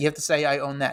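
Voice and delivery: ordinary talk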